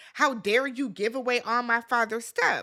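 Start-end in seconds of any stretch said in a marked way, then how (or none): none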